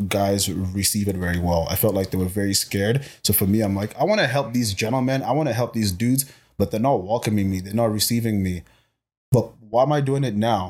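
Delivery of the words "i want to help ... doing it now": usual speaking voice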